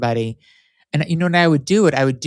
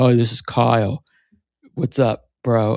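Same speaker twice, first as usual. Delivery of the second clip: slow, faked macho deep voice; 3 semitones lower than usual. The speaker recalls calling a chat line under a fake name, put-on deep voice. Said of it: "try to like make my voice really deep".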